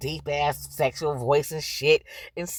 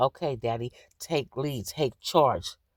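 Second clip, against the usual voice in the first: mock meek voice going quiet; 3 semitones lower than usual. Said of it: "she got quiet".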